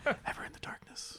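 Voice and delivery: soft, timid, hushed whisper. Performing the scene, the actor starts the line in a timid whisper. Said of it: "I'm whis- I'm whispering".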